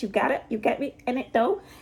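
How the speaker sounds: faint, slight touch of British accent. Showing listeners the tiny bit of British accent, slight British accent. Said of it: "I also have a tiny bit British accent".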